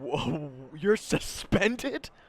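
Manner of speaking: high, slow, astonished whoa. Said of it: "he goes".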